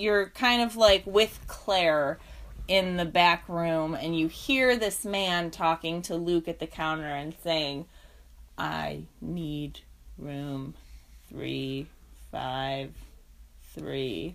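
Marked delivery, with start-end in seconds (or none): 8.6-14.3 super creepy, weird, very hushed whisper. Retelling a man talking at the counter, in a super creepy, weird voice. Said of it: "he's speaking in a super creepy, weird voice".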